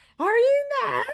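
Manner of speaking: clumsy put-on Scottish accent, loud and high. Showing the only Scottish line they can do: bad Scottish accent. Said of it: "the only Scottish line I can do is".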